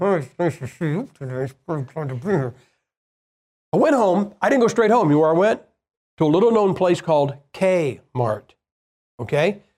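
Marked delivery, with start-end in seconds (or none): 0.0-2.5 put-on forced pleasantness, soft, through clenched teeth. Retelling the nice things he forced himself to say, through gritted teeth. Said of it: "every nice thing I could through gritted teeth".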